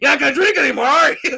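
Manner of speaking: high, loud, teasing, taunting call.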